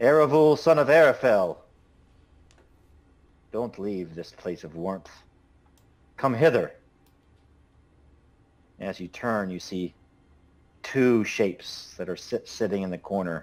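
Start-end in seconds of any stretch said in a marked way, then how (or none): 0.0-6.7 quite serious voice calling out, higher and louder. A figure in a dark corner calls to eravul at the door, quite serious voice. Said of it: "you hear a quite serious voice kind of call out".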